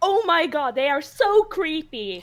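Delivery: booming outburst, very loud and high. Voicing a character pointing at plague doctors: very loud. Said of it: "just kind of says very loudly".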